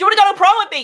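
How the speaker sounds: sudden loud, high-pitched blurted outburst. Voicing Morgaine interrupting a conversation: suddenly blurting out. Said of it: "Morgaine suddenly bursts out".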